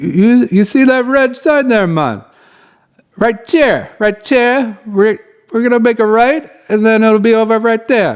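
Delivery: bad put-on Jamaican accent. Retelling how Tony, the guide, answered when asked how much longer: bad Jamaican accent imitating Tony. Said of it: "Pardon the bad Jamaican accent".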